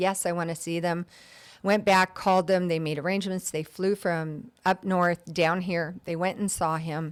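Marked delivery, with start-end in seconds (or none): none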